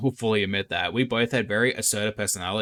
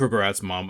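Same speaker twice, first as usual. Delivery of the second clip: ordinary delivery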